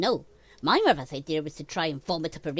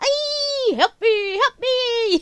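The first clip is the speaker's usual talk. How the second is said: loud, squeaky, very high put-on cricket voice; 5 dB louder than usual. Feeding a painted cricket to a spider, the speaker voices it: put-on cricket voice. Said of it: "And I'll do his voice".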